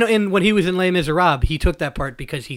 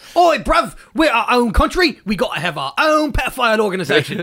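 put-on London Cockney accent, pitched high; 5 semitones higher than usual. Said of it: "slightly different than the Cockney".

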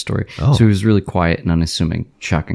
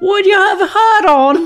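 mock British voice, falling tune, higher, louder; 5 dB louder than usual. Joking about a man shaving in a hat: put-on british accent. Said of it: "they inflect downwards".

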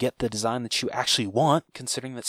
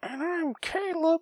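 clumsy, awful put-on voice, very high pitched. Signing off a solo podcast episode: horrible impression of Caleb. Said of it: "that was a horrible impression".

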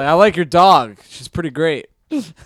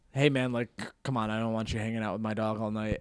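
mock condescending, dismissive, very quiet, low mutter; 5 semitones lower, 14 dB quieter than usual. Retelling a guy at a bar telling him off about petting his dog, imitating a dismissive man. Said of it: "he kind of dismissively went like".

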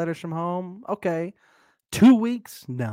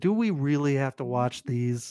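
plain

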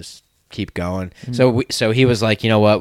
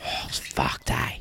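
put-on Australian accent, lower, quieter; 8 semitones lower, 10 dB quieter than usual. Hosts riffing on getting drunk in Australia: put-on Australian accent. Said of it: "I like it when you guys do the Australian accent".

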